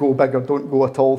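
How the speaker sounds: plain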